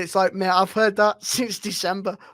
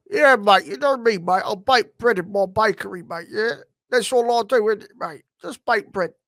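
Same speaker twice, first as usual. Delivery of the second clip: acted hard-man gangster voice with London accent. Showing an impression you used to do, an Alfie Solomon impression. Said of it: "I used to do a Alfie Solomon".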